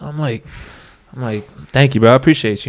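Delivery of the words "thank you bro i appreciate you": put-on overly polite voice. Retelling thanking a stranger who praised him: imitating own overly polite voice.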